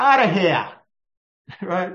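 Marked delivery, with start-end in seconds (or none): 0.0-0.7 loud Brooklyn New York accent. Showing how people would say it in New York: Brooklyn accent. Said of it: "as we would say in New York, ... That Brooklyn accent".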